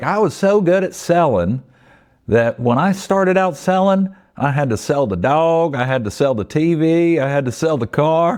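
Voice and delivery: high Southern salesman drawl. Quoting a favorite line from Zig Ziglar: Zig Ziglar impression, Southern drawl. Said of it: "I'll try to do my best Zig Ziglar impression".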